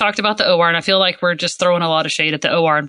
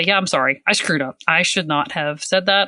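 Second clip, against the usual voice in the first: normal talking voice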